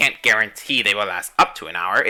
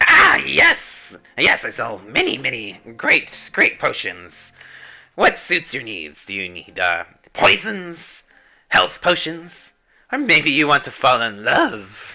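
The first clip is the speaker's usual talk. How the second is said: put-on raggedy, ragged old woman voice; 4 semitones higher than usual. Voicing a potion seller answering visitors' questions, raggedy old woman voice. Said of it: "the raggedy old woman's going to be moving in".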